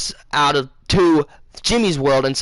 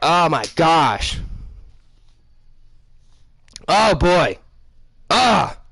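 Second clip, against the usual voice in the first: choked up, fighting back tears. Remembering a late grandfather while telling the story, fighting back tears. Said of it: "I'm trying not to cry".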